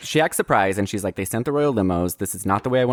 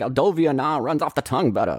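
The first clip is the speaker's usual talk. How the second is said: put-on Brooklyn accent, much higher; 4 semitones higher than usual. Describing a slimy dad who gets off the plane, the speaker quotes him: imitating a Brooklyn accent. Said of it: "has a kind of more real Brooklyn accent".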